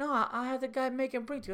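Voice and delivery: put-on Italian-American accent, pitched very high. Retelling a comedy club owner's reply to the speaker: imitating an italian accent. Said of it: "it was so Italian and funny".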